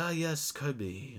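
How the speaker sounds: put-on speaking with a Spanish accent. Recalling a cartoon episode, the speaker quotes Meta Knight: Meta Knight's Spanish accent. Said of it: "he had like a Spanish accent".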